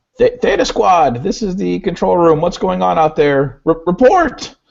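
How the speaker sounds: very high, anxious, nervous voice. Game master voicing the control room over the door comm to the squad, nervous voice over comm. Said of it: "a nervous voice crackles through the comm".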